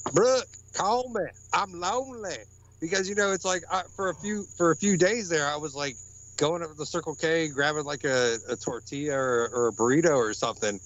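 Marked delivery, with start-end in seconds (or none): 0.1-2.4 fake country accent, pitched high. Messing with someone who won't answer his calls, in a put-on country voice. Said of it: "I got in a country voice and I was like".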